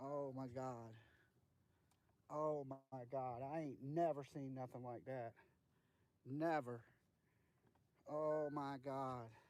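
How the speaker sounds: shaken, trembling voice. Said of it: "I'm shaking. I'm literally shaking".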